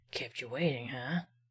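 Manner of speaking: deliberately bad character voice, low and very hushed. Before focusing on today's game, the speaker tries a bad Snake voice. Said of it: "That's my best snake voice".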